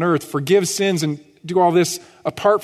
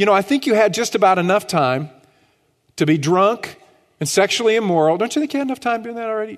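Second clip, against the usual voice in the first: play-acted, heavy, exaggerated, dripping sarcasm; 3 semitones higher than usual. Paraphrasing the apostle's words to the listeners: sarcastic Peter paraphrase. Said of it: "Peter's being exceedingly sarcastic".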